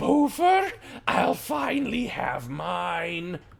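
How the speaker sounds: gloating villain cackle, high and swooping, mine drawn out. Game master voicing a creature that just smashed a player's shield, cackling. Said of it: "as she cackles".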